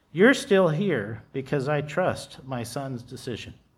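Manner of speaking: plain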